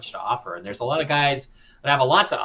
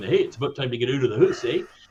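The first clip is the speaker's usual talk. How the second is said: put-on Canadian accent, ending lifting up. Explaining the essence of the canadian accent: put-on canadian accent, rising ending. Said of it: "the essence of the Canadian accent".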